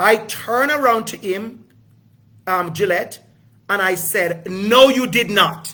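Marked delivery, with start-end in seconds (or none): 4.5-5.7 loud, confrontational tone. Retelling confronting a bank worker who skipped him: retelling a loud confrontation. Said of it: "in [name]'s voice".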